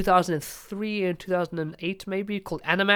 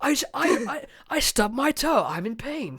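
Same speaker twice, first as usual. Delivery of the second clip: over-the-top, overly sincere anime delivery, pitched higher; 6 semitones higher than usual. Mocking how anime characters talk, demonstrating over-the-top anime sincerity. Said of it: "everything's very sincere and over the top".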